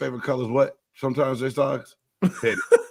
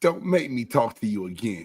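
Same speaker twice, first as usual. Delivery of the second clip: mock stern, condescending, talking-down scolding tone; 3 semitones lower than usual. Retelling a comeback to a trash-talking Jets fan: retelling scolding like adult to child. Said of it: "like I was an adult talking to a child".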